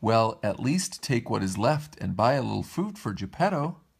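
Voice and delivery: ordinary delivery, nothing marked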